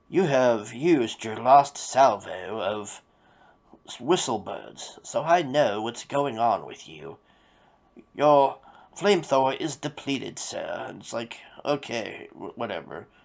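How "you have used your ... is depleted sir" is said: lofty, pompous orating delivery. Retelling a villain's lines, imitating a pompous speech-giving manner. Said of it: "he talks like he's doing a speech to a Harvard class".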